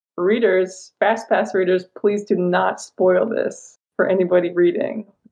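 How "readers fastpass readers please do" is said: plain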